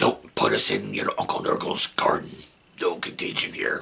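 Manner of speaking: menacing dad voice, breathy, scary whisper. Asking channel viewers for likes and comments, the host speaks in a scary daddy voice. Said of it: "that's scary daddy voice".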